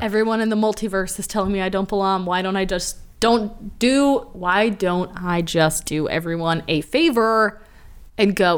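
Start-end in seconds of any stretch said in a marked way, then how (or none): none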